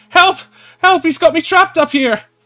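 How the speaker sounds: very loud, very high shrieking screams. Voicing a trapped character calling down to the players: Polly screaming for help. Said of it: "you hear Polly screaming out".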